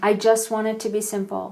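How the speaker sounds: tearful, imitated crying child voice. Retelling a daughter's words while she was crying: imitating a crying child. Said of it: "she's crying".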